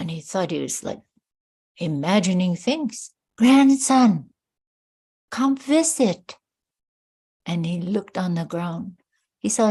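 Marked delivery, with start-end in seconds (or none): 3.4-6.4 small, little high voice, raised. Telling a story, voicing an elder calling to her grandson: little voice. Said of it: "hear a little voice".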